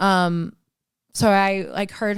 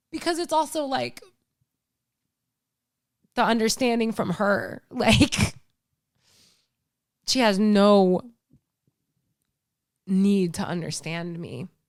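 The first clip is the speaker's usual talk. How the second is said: tearful speech, crying while talking. Talking about being unable to help a woman while unemployed, crying while talking. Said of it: "Why am I crying?".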